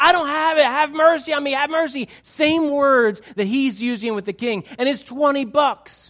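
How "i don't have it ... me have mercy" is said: high, pleading, begging voice. Retelling a story, the speaker acts out a debtor pleading for mercy. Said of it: "the guy's pleading and saying".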